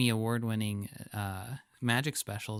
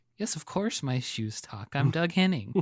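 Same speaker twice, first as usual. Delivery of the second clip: put-on earnest, matter-of-fact voice, higher pitched; 3 semitones higher, 4 dB louder than usual. Retelling how a magician on the show sells his talking shoes: imitating Doug Henning's earnest delivery. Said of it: "sells that so well".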